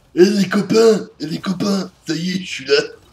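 loud, belted put-on creature voice. Playing a game, calling to his friends while trying a Krogan voice. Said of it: "je vais essayer de prendre une voix Krogan".

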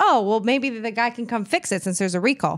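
ordinary delivery

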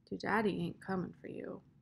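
quiet, soft-spoken, hushed words. Reading his words to a girl who waits for her father to come, said softly. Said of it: "he said softly".

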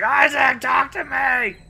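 very high, very slow, raspy drawn-out scream. Retelling what Carver just yelled during the game: imitating Carver screaming. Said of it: "Carver was just screaming".

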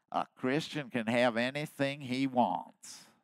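strong East Texas drawl, preacher style. Quoting a teacher's reply to a question he was asked, in an East Texas drawl. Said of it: "in that East Texas drawl, East Texas Baptist drawl".

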